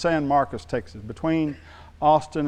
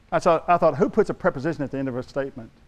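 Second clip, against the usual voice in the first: ordinary talk, nothing marked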